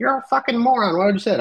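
put-on very high, babyish, angry toddler voice. Reading out angry messages from fans online: imitating kids in a toddler voice. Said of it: "you use a voice of, like, a toddler".

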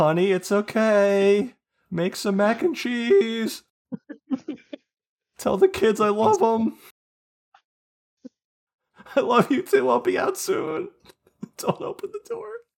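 very high, loud wailing sob, "okay" stretched. Imagining a man hiding behind a closed door, talking to his wife: mock crying. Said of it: "As he cries himself".

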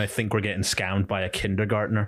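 plain

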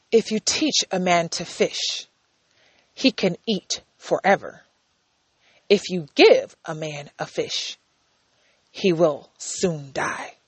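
whispered, hushed, breathy, sage-like voice. Presenter quoting a classic saying, in a philosophical voice. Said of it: "That was my philosophical voice".

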